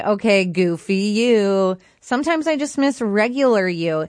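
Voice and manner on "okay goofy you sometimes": usual speaking voice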